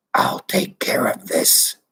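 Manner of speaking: deep, low, hoarse rasping voice. Narrator reads an unknown voice cutting into Shanks's earphones, deep, rasping voice. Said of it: "said the deep, rasping voice".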